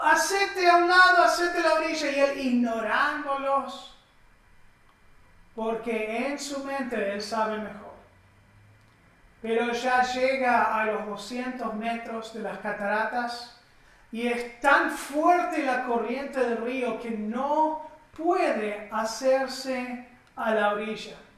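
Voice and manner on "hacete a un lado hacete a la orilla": high, loud shout, called out.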